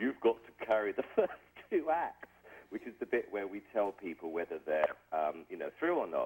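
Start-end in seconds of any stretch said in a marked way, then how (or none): 0.0-2.3 mock very serious, dead-serious, solemn voice. Retelling what the producers told them: imitating a very serious voice. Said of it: "in a very serious voice".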